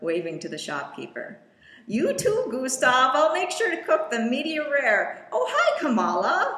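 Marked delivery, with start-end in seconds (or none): 1.9-6.6 chatty, chattering bear voice, high and loud. Narrator voices a grizzly bear mom leaving a store, then meeting Kamala: Molly, grizzly bear mom voice. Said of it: "[name]'s mom, [name], a grizzly bear".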